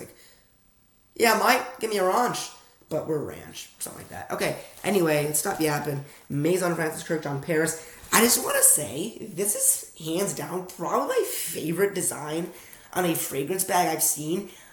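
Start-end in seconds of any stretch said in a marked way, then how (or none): 1.1-2.5 put-on British accent, UK-style pronunciation, pitched up. Comparing how UK and US speakers say a word, in a put-on British accent. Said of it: "that's how their accent works".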